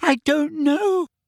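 terrified, panicked, very high-pitched squeal. Asked by the giant where someone is, she answers with a terrified squeal. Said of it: "squealed Hermione, terrified".

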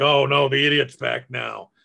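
rough, creaky godlike voice from above. Retelling a story of a man driving a cupcake truck, voicing a godlike voice. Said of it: "there's this godlike voice".

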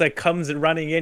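ordinary talk

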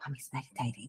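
soft hushed shush.

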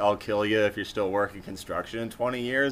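ordinary talk

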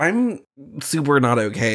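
ordinary talk, nothing marked

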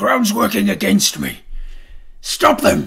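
very loud ragged yell. Voicing a boar as plants coil around his feet, shouting. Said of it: "He shouts this in Draconic".

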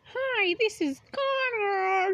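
very high, very slow, drawn-out voice. Doing a quick voice impression of an absent podcast member: imitating Connor. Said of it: "I'll do a quick voice impression".

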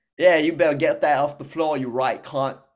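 smug, taunting put-on Australian accent. Acting out what a guy would say while slapping, in an australian accent. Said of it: "with that fucking Australian accent".

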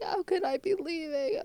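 very high, hysterical crying voice. Recalling a past breakdown, retelling hysterical crying. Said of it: "I was just crying like a crazy person".

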